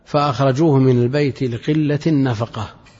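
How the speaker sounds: plain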